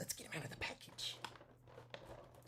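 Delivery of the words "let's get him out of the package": fast, whispered, put-on clown voice. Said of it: "It's my clown impression".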